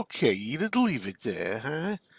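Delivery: slow, swooping, sing-song whine. Recalling answering her when she brings over a plate, whining Archie impression. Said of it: "do that whining Archie voice".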